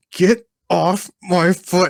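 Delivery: mock, very slow, drawn-out, angry, pissed-off voice. Retelling how a man with a car on his foot reacted: imitating someone super pissed. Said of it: "super pissed".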